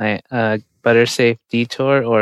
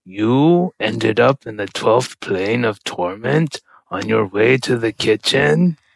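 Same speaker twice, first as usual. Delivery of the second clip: put-on voice of a hellish demon. Retelling a scene, the demon answers the lost little guy, demon voice. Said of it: "In a demon voice".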